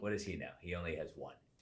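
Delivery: ordinary delivery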